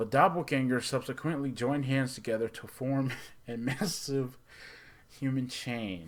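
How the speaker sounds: speaking through laughter. Speaker summarizing a film's plot, laughing while reading. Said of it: "I'm laughing".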